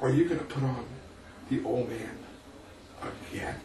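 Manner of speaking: disgusted, hushed whisper. Telling a story about suddenly hearing a voice, retelling a disgusted remark. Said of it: "in this disgusted tone of voice".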